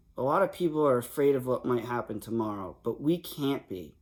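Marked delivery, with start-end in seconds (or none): none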